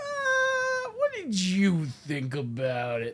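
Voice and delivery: mock very slow, noncommittal shrugging tone. Imitating the other speaker's earlier question: imitating an unsure "i don't know" tone. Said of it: "Your tone of voice was like".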